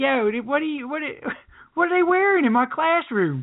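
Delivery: put-on Philadelphia accent. Imitating a teacher who is a total Philly fan, sounding like Terry from Philly. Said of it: "she sounds like our buddy Terry from Philly".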